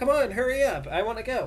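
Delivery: put-on very high, very loud, shrill child voice. Voicing a child character speaking for the first time, in a high-pitched voice. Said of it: "in kind of like a high pitched voice".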